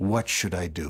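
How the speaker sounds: put-on, low, tired, worn-out, weary voice. Retelling what the president said after half an hour of shouting, retelling a weary question. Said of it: "in a weary tone of voice".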